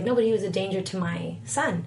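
ordinary delivery

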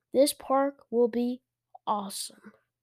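ordinary delivery

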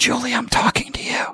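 whispering. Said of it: "I'm whispering for Julie".

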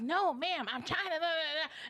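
put-on yelling. Retelling a phone call where the other person yelled: imitating someone yelling. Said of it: "she was, like, yelling into the phone".

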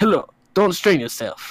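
poor, clumsy, fumbling fake Russian accent. Having announced a Russian-accent attempt that will be bad, reading a line in a bad Russian accent. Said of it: "I'm gonna try a Russian accent".

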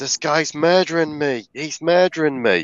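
high, panicked, desperate scream. Speaker retelling a true story of a man stabbed in an alleyway, retelling a scream.

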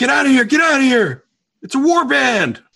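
very high, very loud, shrill shouting. Voicing fighters who warn others to flee the war band: yelling. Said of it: "they're yelling".

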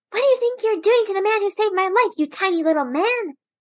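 high-pitched, loud, indignant scolding.

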